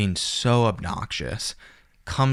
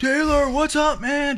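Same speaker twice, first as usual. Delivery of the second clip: mock shrill, very high, obnoxious heckling shout; 4 dB louder than usual. Retelling how a man on a plane greeted him: imitating someone screaming. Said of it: "screaming at me at five A M on the airplane".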